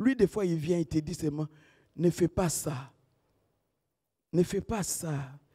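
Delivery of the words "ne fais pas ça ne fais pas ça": hushed, tender, soft, gentle low voice. Speaker shows how the Holy Spirit speaks, not by shouting, in a very soft, gentle voice. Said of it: "Il est dit tellement en douceur".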